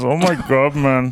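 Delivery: put-on Indian accent. Joking about a lady in the river, put-on Indian accent. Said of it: "They all have the same voice".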